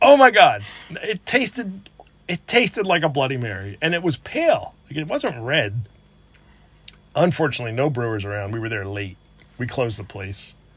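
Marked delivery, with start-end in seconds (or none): 0.0-0.6 very high, loud, amazed, thrilled exclamation. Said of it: "I was like".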